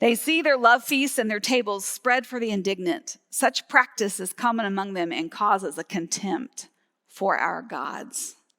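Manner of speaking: normal talking voice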